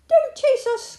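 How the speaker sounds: shrill, very high-pitched cry at full volume. Molly answers the old farm dog who claims the doll, cried out. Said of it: "cried Molly".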